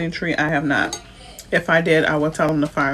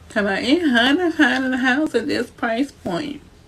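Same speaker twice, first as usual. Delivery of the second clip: high, weepy, tearful crying voice; 8 semitones higher than usual. Retelling how a woman was on here crying, he imitates her: mock crying. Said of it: "I did your voice like that".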